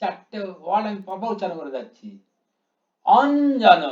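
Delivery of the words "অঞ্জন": অ stressed strongly. Pronouncing the word অঞ্জন syllable by syllable, strong stress on অ. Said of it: "অয়ের মাথায় অনেক জোর দিয়েছি আমি".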